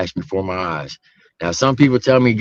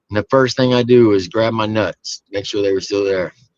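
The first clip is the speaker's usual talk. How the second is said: usual speaking voice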